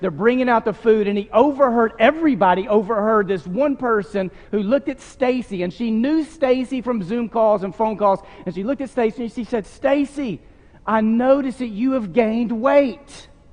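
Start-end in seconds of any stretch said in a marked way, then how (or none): 9.7-13.2 delighted, cheerful, joyful tone, drawn out. Retelling a guest's remark to stacy at a gathering: imitating a joyful remark. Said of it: "she said it with joy in her voice".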